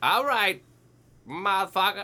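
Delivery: worst-ever fake Boston accent. Speaker imagines the other person's mama reacting when he shows up, in a bad Boston accent. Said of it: "That's the worst Boston accent".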